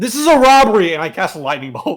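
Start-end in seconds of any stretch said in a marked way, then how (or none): 0.0-0.9 loud, high, top-of-the-lungs holler. Voicing a character who declares a robbery: yelling at the top of his lungs. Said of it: "Kel yells at the top of his lungs".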